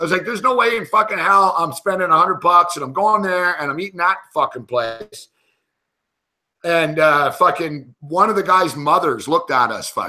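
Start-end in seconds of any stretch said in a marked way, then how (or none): 0.2-5.3 mock worked-up, furious angry ranting. Retelling refusing to pay for a steakhouse dinner: retelling an angry fit. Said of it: "went into an instant, like, fucking fit".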